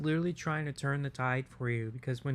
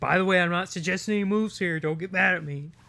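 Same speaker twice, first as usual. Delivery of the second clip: put-on commentator voice, higher and louder; 5 semitones higher, 7 dB louder than usual. Retelling what Snake now says after each comment: imitating Snake. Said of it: "he's like".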